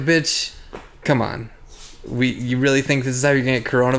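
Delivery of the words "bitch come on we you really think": ordinary delivery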